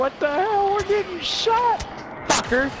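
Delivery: high panicked mock voice.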